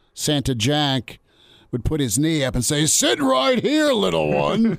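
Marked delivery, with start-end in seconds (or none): 2.9-4.8 mock very high, rough, loud booming voice. Radio host recalling Santa Jack during free throw attempts, Santa Jack's loud booming voice. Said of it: "in this loud booming voice".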